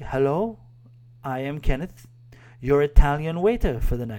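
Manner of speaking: put-on Filipino accent. Retelling a waiter's greeting at the table, impersonating Kenneth the waiter. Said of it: "forgive me for impersonating again".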